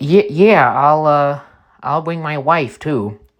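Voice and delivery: put-on Upper Midwest Wisconsin accent. Retelling Conway's reply: Conway's Wisconsin accent. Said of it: "Conway said in his Wisconsin accent".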